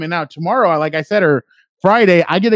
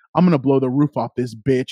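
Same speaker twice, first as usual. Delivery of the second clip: put-on serious, intense voice, lower; 5 semitones lower than usual. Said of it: "he gets all serious and he gets all into it".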